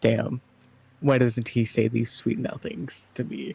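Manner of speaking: muttered under the breath, half-joking. Voicing a character muttering about sweet nothings: muttered under breath, half-joking. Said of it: "under his breath".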